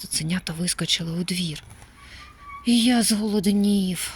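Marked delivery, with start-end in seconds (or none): 2.7-4.1 grumbling, complaining tone, louder. One of the puppies chasing a bandit into the yard speaks up, complaining. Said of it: "нарікав Ролі".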